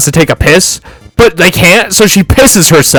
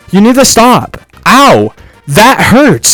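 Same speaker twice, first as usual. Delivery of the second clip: exaggerated, drawn-out, sing-song voice; 4 semitones higher than usual.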